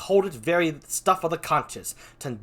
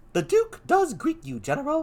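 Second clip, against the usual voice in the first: character voice pitched noticeably higher than normal; 12 semitones higher than usual. Reading a play aloud and giving a character a voice: higher Cassio voice. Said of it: "Kind of a higher voice. There we go".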